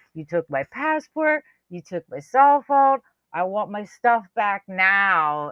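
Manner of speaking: put-on, slow, deliberate shouting, "now" drawn out long. Retelling a woman who grabbed a pickpocket: retelling someone yelling. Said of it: "she's standing there yelling at her".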